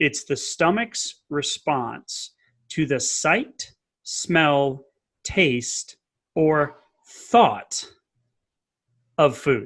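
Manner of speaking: really slow, careful, deliberate drawn-out delivery. Explaining the phases of digestion, the speaker says this part really slowly. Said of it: "I'm going to say this really slowly".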